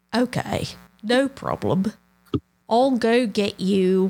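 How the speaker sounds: put-on slight Australian accent slipping in. Acting out what he would say, slight Australian accent. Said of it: "I'm sounding a little Australian".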